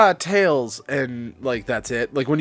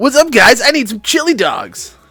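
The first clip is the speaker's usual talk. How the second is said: very high, loud cartoon voice; 10 semitones higher, 8 dB louder than usual. Asked by another speaker to hear their Sonic: Sonic voice. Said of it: "let me hear your Sonic".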